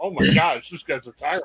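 ordinary delivery

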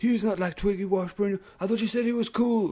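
mock very high screaming. Recalling what they overheard a man screaming, retelling someone screaming. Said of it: "I just heard him screaming".

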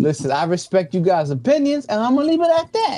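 sounding Boston-accented. Telling the others he respects their opinions, in a boston accent. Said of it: "Why are you starting to sound like you from Boston".

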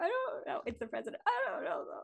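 put-on flustered, high voice, close to crying. Imagining being screamed a question like in a training scene, acting flustered near tears. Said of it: "I would cry if someone screamed at me".

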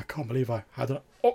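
dazed, shell-shocked, queasy mutter to himself. Describing a monk talking to himself, the speaker imitates a shell-shocked monk. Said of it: "you can hear the sort of like almost like shell shocked like monk".

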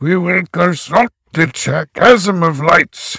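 grandiose samurai-style voice. Quoting the head Optera's line in a bombastic samurai voice. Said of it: "a very bombastic samurai impression".

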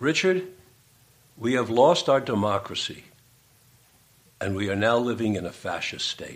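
usual speaking voice

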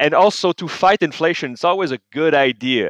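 dry, tongue-in-cheek sarcasm, meaning the opposite. Commenting on promised tax cuts as an inflation fix: sarcastic. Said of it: "and I'm being sarcastic here".

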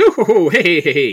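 countryside English, Irish or Scottish accent. Speaker describes how halflings usually sound, doing a rural British Isles accent. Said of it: "from rural England or Ireland or Scotland".

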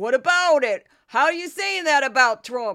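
deliberately bad, booming, loud outburst. Recalling when he supported Trump: bad Michael Cohen impression. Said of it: "that's my bad Michael Cohen impression".

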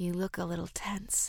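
soft, quiet murmur. She speaks to him, enjoying being in control, murmuring. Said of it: "she murmured".

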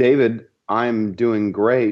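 slow robotic computer voice. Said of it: "This is like computer Tim".

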